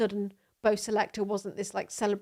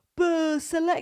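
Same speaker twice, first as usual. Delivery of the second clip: put-on high-pitched, strong northern English accent; 8 semitones higher, 4 dB louder than usual. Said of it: "He would have, like, a northern accent".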